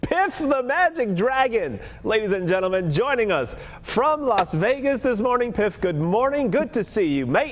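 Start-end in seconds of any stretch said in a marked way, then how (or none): 6.5-7.5 put-on British accent. A host greets a guest joining from Las Vegas, fake British accent. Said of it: "Was that a British accent you just did there".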